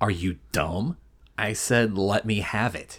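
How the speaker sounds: quietly rude. Recapping a scene where a drinking man demands a fire poker: mock-rude Marshall Bell impression. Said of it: "In the Marshall Bell way of being an asshole".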